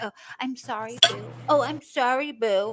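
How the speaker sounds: mock spineless, groveling, slow, simpering, pathetic tone. Mocking how he apologizes to her: mocking pathetic apology. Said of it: "What a pathetic little bitch".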